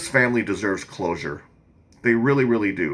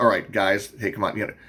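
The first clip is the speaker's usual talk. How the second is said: put-on matter-of-fact, casual, commanding tone. Imitating how a man on a recording calls to the girls: imitating a matter-of-fact commanding tone. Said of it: "it's so matter of fact".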